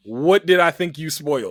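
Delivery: normal talking voice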